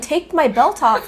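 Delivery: loud yell, the same words repeated over and over. Recounting how he kept shouting the same demand, retelling someone yelling. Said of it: "he kept yelling".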